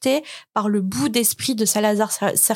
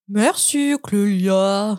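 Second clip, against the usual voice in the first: put-on Swiss French accent. Thanking Clélia, speaking in a fake Swiss accent. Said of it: "Désolée pour l'accent suisse".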